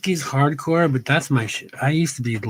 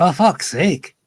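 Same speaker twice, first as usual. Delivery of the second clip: put-on Scottish accent; 3 semitones higher, 4 dB louder than usual. Speaker slipping back into being Scottish on the internet: Scottish accent. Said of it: "since I've been Scottish on the internet".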